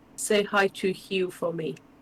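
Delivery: barely audible, very soft half-whisper. Recounting Peggy throwing the dirt on with a spade, in a very soft half-whisper. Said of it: "she whispers very softly".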